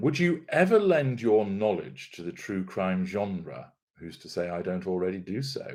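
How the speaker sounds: ordinary delivery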